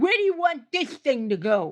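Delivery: overloud voice with heavy lisp. Recalling a man hired for the day, imitating how he talked: too loud, with a lisp. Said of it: "he was like too loud and he had a lisp".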